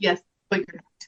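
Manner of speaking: dead serious, completely straight delivery. Retelling a reply Dallas gave in season one: imitating Dallas saying it seriously. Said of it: "he said it so seriously like that".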